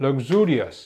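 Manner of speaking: luxurious with stress shifted to the second syllable.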